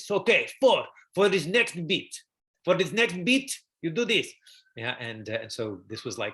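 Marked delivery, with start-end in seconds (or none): 0.0-4.3 put-on heavy, thick Russian accent, loud and high. Retelling a theater director's workshop advice, imitating Stanislavski's thick Russian accent. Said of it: "with his thick Russian accent".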